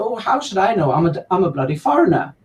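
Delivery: dry, self-mocking, sarcastic. Retelling a joke told to Norwegians about being a foreigner: sarcastic. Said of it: "to just sarcastically say".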